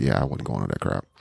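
dismissive, snickering, sniggering scoff. Retelling what a student said about a missed meeting: imitating a dismissive snicker. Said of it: "she kinda said in a kinda this he, he, he, like".

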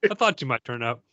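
bone dry, deadpan, selling nothing. Describing a movie moment, quoting his line, imitating Bill Murray's deadpan. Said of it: "that perfect Bill Murray deadpan no sell".

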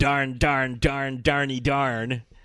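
very slow, angry clean cursing, each darn ground out. Retelling a movie scene where a character gets angry: angry Liam Neeson impression. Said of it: "Liam Neeson gets angry and says".

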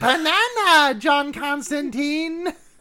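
squeaky cartoon voice, very high pitched. Describing a demon in a scene: Minion voice. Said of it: "the demon has minion voice".

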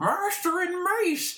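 very high, squeaky, muffled voice with a full mouth. Retelling a movie scene where he holds a lightsaber in his mouth, imitating Jar Jar, mouth full. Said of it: "with the lightsaber in his mouth".

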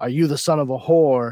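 loud, shrill screaming outburst. Retelling a story scene where the father beats his son: imitating a father screaming. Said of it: "and screaming at him".

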